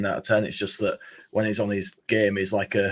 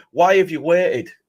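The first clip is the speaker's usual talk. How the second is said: high, loud, exasperated yell. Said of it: "and you're like".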